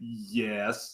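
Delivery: put-on, drawn-out yes dripping with disgust. Imitating a game character's reply, sounding disgusted. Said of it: "He's all, like, just disgusted".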